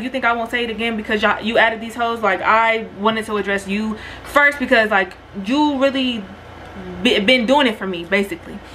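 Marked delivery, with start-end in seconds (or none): none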